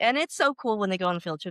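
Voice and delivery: ordinary talk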